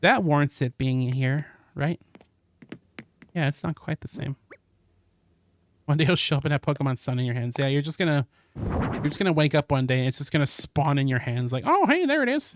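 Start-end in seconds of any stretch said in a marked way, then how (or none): 11.7-12.6 very high, chirpy, tossed-out exclamation. Imitating someone finding a game in their hands, sounding like Ned Flanders. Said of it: "why you sound like Ned Flanders".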